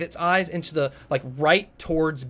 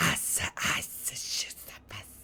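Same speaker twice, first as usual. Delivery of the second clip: slow, whispered, softened hissing voice. Imagining another player speaking snake language: watered-down Parseltongue hissing. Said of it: "I imagine you doing, like, a very watered down version".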